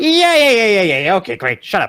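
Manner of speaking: offhand, dismissive lich voice, high and swooping. Voicing the lich answering the commander in abyssal: dismissive lich reply. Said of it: "you hear in abyssal him responding like".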